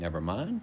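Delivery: calm, curious upward pitch on "mind". Demonstrating the reply never mind, with rising pitch on mind. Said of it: "end it with that upward tone".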